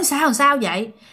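ordinary talk, nothing marked

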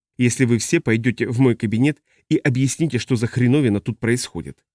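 ordinary delivery

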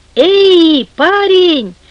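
loud, carrying call. From the shore, hailing the man in the boat, calling out loudly. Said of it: "окликнул Тор, приложив руки ко рту".

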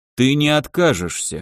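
calm, composed. An elder answers a man who asks what happens if he refuses; calm. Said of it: "спокойно сказал старейшина".

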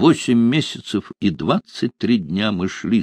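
plain

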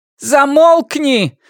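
loud shrill shout at very high pitch. A woman answers Valeria's question, shouting back. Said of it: "крикнула в ответ женщина".

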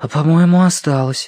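whispering. A character in a story points something out to the others, whispered. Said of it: "прошептал Гига".

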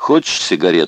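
ordinary delivery, nothing marked

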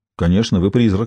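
plain reading voice

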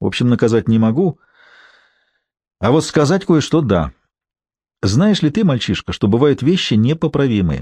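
plain

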